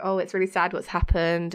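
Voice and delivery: ordinary talk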